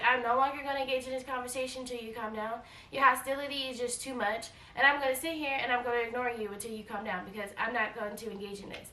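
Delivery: ordinary talk, nothing marked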